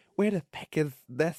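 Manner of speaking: awful, high-pitched, put-on Irish accent. Showing how one talks going around the house, bad put-on Irish accent. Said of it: "in like an Irish accent".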